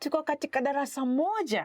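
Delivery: slight surprised pitch rise on moja. Demonstrating how a Swahili sentence expresses emotion, slight surprised rise at end. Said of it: "you kind of raise your voice a little bit".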